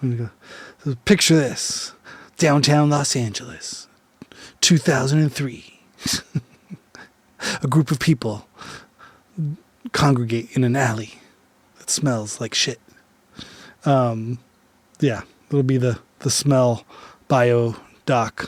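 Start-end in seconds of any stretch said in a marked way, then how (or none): 0.8-12.8 dramatic, played-up documentary narrator voice. Podcast host closing the show, opening a pretend documentary, documentary narrator voice. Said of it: "This is going to be my narrator voice".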